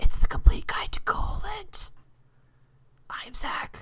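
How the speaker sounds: pretend, high, hushed whisper.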